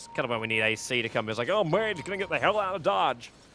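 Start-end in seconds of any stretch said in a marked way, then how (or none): 1.5-3.3 bad, overdone, terrible put-on American accent. Acting out a player's reaction in a way he doesn't really talk, in a terrible american accent. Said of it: "Terrible accent".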